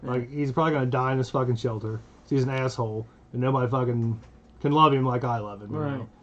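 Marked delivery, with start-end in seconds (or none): none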